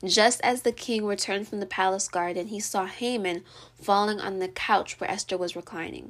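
normal talking voice

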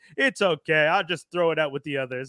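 ordinary delivery

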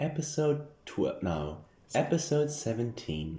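audiobook-style narrator reading voice. A host announces the episode number in an audiobook narrator voice. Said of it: "Audiobook voice".

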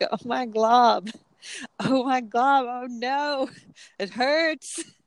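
very slow, drawn-out, acted pained howling and screaming. Retelling a cartoon scene, the speaker acts out Lumpy Space Princess screaming. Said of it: "she's screaming".

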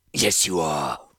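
sibilant, hissing creature voice. The Cataran replies to a commander who says he is busy; hissing. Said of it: "the Cataran hissed".

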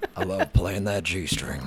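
put-on baritone voice, laid on thick. Joking about playing a guitar's g string: put-on baritone voice. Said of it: "getting good at that baritone voice".

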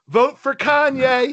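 play-acted very high-pitched, loud shout. Retelling a prank from a car window: imitating Michael yelling. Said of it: "Michael yells".

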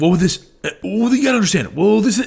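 fast, high, rambling, jumpy delivery. Describing clips from a podcast, mimicking Alex Jones: fast rambling. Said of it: "you sound like a fucking rambling madman".

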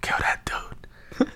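quiet, slow whispering.

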